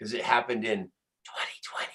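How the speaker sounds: soft, hushed, secretive whisper.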